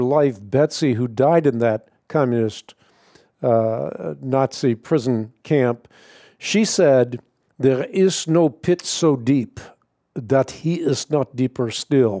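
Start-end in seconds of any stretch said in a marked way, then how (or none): 7.6-12.2 put-on Dutch accent. Quoting Betsy in a prison camp, in Betsy's Dutch brogue. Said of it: "in her Dutch brogue".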